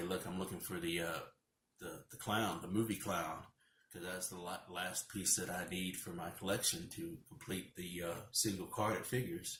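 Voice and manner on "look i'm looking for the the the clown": plain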